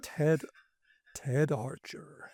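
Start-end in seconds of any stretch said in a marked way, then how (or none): 1.1-2.3 put-on American accent. Saying a director's credited name: American accent. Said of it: "Nice American accent there".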